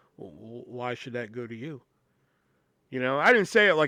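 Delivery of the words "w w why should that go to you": hushed, very quiet stage whisper, stumbling start. Retelling a complaint to a coworker at the register: retelling a half-whisper. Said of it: "I kinda whispered to her".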